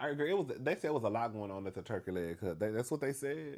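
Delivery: normal talking voice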